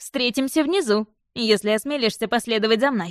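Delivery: ordinary delivery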